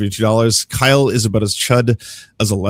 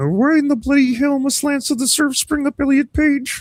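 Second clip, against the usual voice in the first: very high-pitched character voice. Reading a requested line aloud, done in a Jordan B. Peterson voice. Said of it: "Say this in a Jordan B. Peterson voice".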